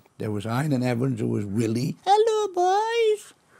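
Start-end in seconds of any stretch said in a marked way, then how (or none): 2.1-3.4 put-on very high comic voice with boys drawn out. Recalling an old weekly sketch group and its cast, doing Willie's voice. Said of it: "That was his voice".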